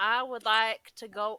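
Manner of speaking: put-on sudden, loud Southern American accent. Declaring a player action in the game: southern accent. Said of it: "I don't know why I'm Southern all of a sudden".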